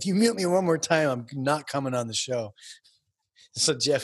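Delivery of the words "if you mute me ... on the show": put-on angry, freaked-out voice. Retelling a caller's threat after being muted: imitating someone freaking out. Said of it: "freaking out".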